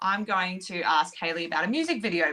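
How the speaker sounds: ordinary delivery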